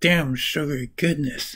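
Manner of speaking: ordinary talk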